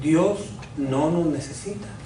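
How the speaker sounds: said slowly and quietly. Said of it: "lo voy a decir despacito".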